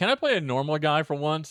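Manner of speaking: plain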